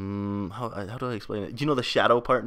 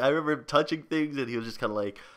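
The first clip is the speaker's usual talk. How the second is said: ordinary talk, nothing marked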